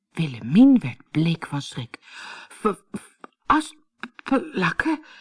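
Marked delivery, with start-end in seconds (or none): 3.5-5.0 faltering stutter breaking up the word. The woman repeats the girl's word in fright, stammering. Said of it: "stamelde ze".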